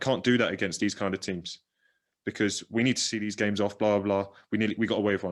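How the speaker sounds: ordinary talk, nothing marked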